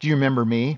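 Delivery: put-on grumpy woman's voice. Retelling what an old teacher said at a funeral: imitating a grumpy woman. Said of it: "this lady's just grumpy".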